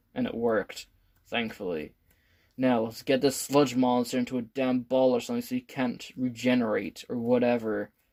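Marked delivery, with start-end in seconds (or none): none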